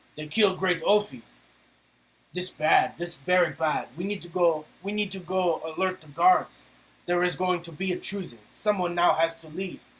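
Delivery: voiced as a fantasy orc character. Narrating to players, the speaker voices an overheard orc in a deeper orc voice. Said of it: "a deeper voice say".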